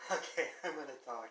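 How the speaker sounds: words breaking up with laughter throughout. Asked about a phrase, the speaker starts to answer while laughing. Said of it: "I'm sorry, I'm laughing".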